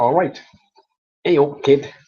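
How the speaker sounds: loud Manchester accent. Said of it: "That's their way of saying".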